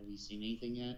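conspiratorial, confiding, secretive tone. A bartender leans in a little and asks you, in a hushed tone. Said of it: "under a hushed tone says".

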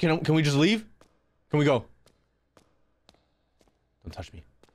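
panicked, desperate begging. Speaker in a creepy place with a companion, panicking. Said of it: "I'm just panicking, dude".

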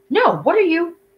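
very high-pitched, frantic cry. Pascal reacts as Jay throws a grenade down the block: frantic. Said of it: "Pascal's frantic voice".

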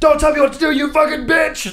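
mock very high, shrill yelling outburst. Retelling how a friend screamed while climbing: imitating someone yelling. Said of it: "just yelling at him".

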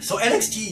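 voice breaking and cracking high, mid-phrase. Praising wrestling matches, the speaker's voice cracks mid-sentence. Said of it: "My voice just cracked".

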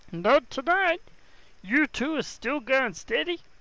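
strained, put-on character voice. Playing a character in a scene, in a strained character voice. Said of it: "that strains my voice".

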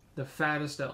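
ordinary talk, nothing marked

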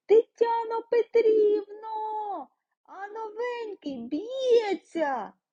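very high, drawn-out yell, carried across room. A boy calls out to Tetyana Petrivna, shouting to the whole group. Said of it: "хлопчисько закричав на всю групу".

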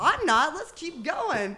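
high, slow, sarcastic drawl.

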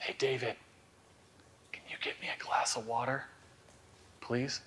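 very quiet, barely voiced whispered aside. Quietly asking someone for a glass of water mid-talk: whispering. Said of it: "so the whispering is kind of ironic".

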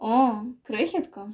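velvety tone, surprised and joyful. A man greets the guy who called him back, velvety, surprised and joyful. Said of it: "В голосі Хінджіна додалося оксамитових ноток".

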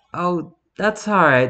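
nervously. Declining the airman's offer to make him better, nervous. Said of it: "the Bellerverse said nervously".

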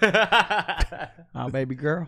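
put-on slow, loud Southern accent. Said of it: "Do, do a little Blue Bayou audition real quick".

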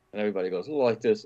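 ordinary delivery

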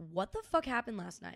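ordinary delivery

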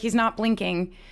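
plain

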